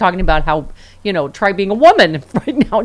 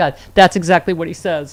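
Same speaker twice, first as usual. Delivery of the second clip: plain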